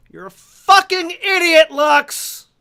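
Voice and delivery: very high, very loud, very slow, shrill drawn-out yell. Voicing a character yelling up at the sky: yelling at the top of lungs. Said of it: "just yell at the top of my lungs".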